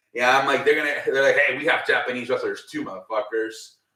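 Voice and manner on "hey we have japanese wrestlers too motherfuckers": ordinary delivery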